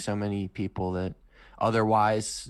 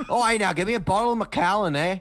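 very high, loud put-on Scottish accent; 11 semitones higher, 7 dB louder than usual. Asked to quote Scotty mid-conversation, the speaker does a Scotty impression. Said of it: "Just start quoting Scotty in the middle of it".

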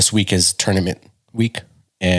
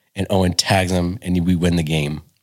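plain

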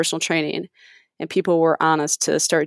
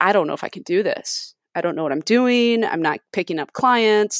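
put-on tearful, crying voice; 3 semitones higher than usual. Retelling a phone call to one's mom: imitating own past crying. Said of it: "crying on the phone".

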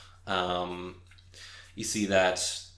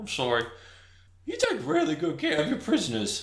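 much higher, mocking put-on character voice. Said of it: "It's like".

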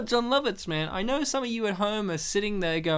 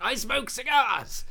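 very Australian cigar-smoker voice, exclaimed; 4 semitones higher than usual. Summing up a movie character: John Lovitz impression. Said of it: "Your impression was very Australian".

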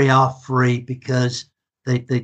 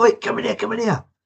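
put-on shout, much higher, slower; 9 semitones higher than usual. Retelling how a bloke called out to them as they walked along, imitating a shout. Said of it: "suddenly a bloke shouts out".

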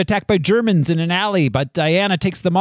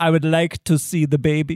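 put-on German-accented voice; 2 semitones lower than usual. Quoting a film line about seeing a baby: Werner Herzog voice. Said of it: "To channel Werner Herzog in The Mandalorian".

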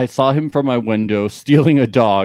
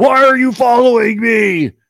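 mock, shrill, very high screaming; 11 semitones higher, 4 dB louder than usual. Reading a story aloud, voicing a stranger in the dark woods: screaming.

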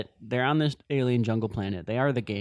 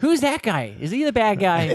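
put-on slow, high-pitched elderly lady voice; 8 semitones higher, 4 dB louder than usual. Imitating an old lady asking questions during a movie: imitating an old lady at the movies. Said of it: "He just called you an old lady".

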